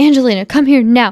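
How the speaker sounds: put-on angry voice. Quoting the mimicked mother's call from the story just read: imitating an angry voice. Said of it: "the angry".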